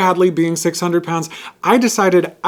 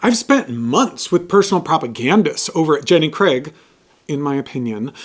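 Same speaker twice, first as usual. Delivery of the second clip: normal talking voice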